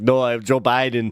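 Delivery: put-on robot voice. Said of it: "that sounds like, uh, Arnold Schwarzenegger".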